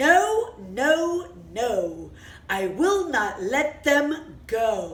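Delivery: very stern, royal-sounding voice. Telling the story of King Pharaoh as he answers, stern King Pharaoh voice. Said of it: "with a very stern voice".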